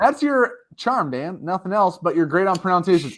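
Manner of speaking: plain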